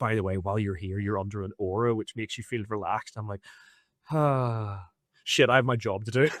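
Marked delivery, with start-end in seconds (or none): 0.0-3.2 secretive, hushed stage whisper. Retelling a man who leaned in to tell him something, the speaker is imitating a half-whisper. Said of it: "leans in and whispers and goes".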